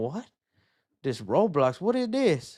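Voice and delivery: put-on baffled, confused old-timer voice. Joking about feeling old when the movie comes out, old man voice. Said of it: "I'm just gonna sound like an old man going".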